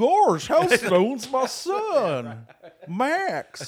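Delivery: very high, very loud swooping drawl, "son" stretched. Imagining the bass player's dad calling as Goofy: imitating Goofy. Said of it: "I wish he called and was like".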